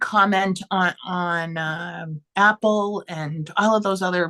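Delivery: halting, tongue-tied stumble over the words. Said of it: "I don't know why I'm tongue-tied".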